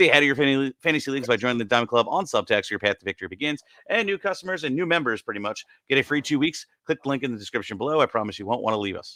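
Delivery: very fast, rushed delivery rattled off at top speed. A podcast host reads a sponsor ad; reading very fast. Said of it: "I read that really fast".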